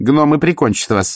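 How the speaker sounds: high, snorting delivery. Reading a novel aloud, the baroness answers Vimes: snorting. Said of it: "фыркнула баронесса".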